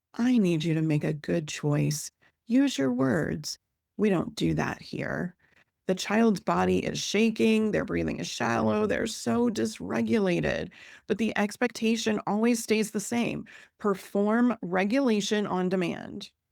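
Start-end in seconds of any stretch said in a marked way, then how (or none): 0.2-5.4 soothing, calm, gentle grown-up tone. Acting out an adult kneeling beside a dysregulated child, calm voice. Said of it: "uses a calm voice".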